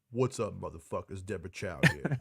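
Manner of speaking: put-on deep tough-guy voice. Imitating a director's commentary voice: imitating Ving Rhames voice. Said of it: "She sounds like Vin Di-, Vin, Ving Rhames?".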